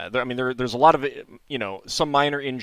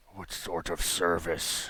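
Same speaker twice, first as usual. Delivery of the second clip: rough, gravelly, soft hissing creature voice; 6 semitones lower, 8 dB quieter than usual. Voicing the creature replying, in a gravelly voice. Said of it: "with a gravelly voice".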